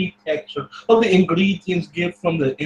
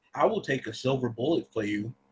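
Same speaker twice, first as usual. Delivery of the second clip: soft, low, hushed half-whisper; 4 semitones lower, 9 dB quieter than usual. In a role-play scene, hugging another character, he is half-whispering. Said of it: "And then he'll just whisper".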